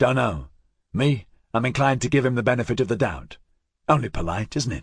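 plain reading voice

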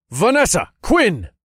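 shouting, very high pitched. The narrator calls out to two women to warn them, shouting. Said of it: "I shouted".

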